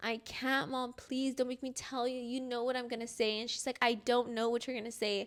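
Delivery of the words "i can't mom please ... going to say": re-enacted crying, quieter and slower. Recounting a talk with their mom, the speaker retells a crying plea. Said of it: "bawling my eyes, crying".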